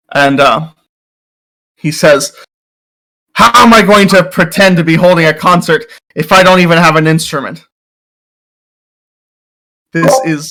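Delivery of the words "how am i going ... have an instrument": furious, indignant, pompous, self-important tone. A game master voices a bard who wakes up to find his instrument stolen: furious bard voice. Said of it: "Uh, and he's very grandiose, and he kind of rubs you the wrong way. He seems very arrogant, / He is a bard, uh, but I say that in the loose sense. Uh, he plays an instrument, but he cannot cast any ba".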